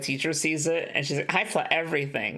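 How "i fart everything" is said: ordinary delivery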